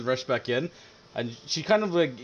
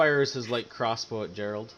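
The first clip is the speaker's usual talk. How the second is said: usual speaking voice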